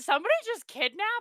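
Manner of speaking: mock alarmed, high, panicked, startled. Retelling a past reaction to an alarm: imitating own panicked question. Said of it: "I got panicked because".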